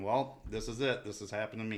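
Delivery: ordinary talk, nothing marked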